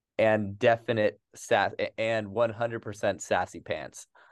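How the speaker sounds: ordinary talk, nothing marked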